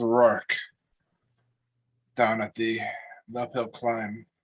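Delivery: labored, struggling breathing. Voicing a character answering the party's question: labored breathing. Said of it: "he's laboring in breath right now".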